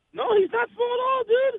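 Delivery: voice shooting up very high. Agreeing that a wrestler is not small at all: voice going high. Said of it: "You heard how high my voice got there".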